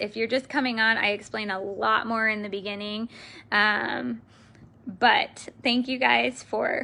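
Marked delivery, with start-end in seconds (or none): 3.5-6.8 slow, emotional voice, heavy with feeling. Speaker thanking the audience at the end, emotional. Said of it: "sorry, I'm so emotional".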